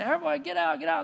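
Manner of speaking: raw, hoarse, high-pitched screaming. Retelling a parable of clowns warning a village: imitating screaming. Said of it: "they start screaming".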